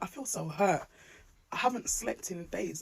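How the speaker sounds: teary, tearful voice cracking and breaking with emotion. A mum keeps apologizing as she speaks, tearing up. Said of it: "I just keep tearing up".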